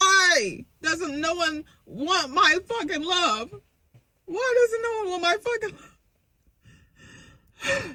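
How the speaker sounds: fake crying, high, sobbing whine. Quoting a woman you are mocking, imitating her fake crying. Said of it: "That's some of the fakest crying".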